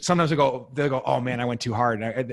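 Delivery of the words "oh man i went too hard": usual speaking voice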